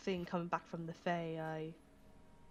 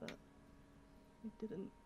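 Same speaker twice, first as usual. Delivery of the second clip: crying, whispered then breaking high. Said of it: "I'm actually crying right now".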